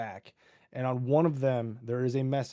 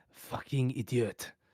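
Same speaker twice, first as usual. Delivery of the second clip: hushed whisper; 3 dB quieter than usual. Voicing an unseen figure as the group moves forward: whispering. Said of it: "you just hear the whisper".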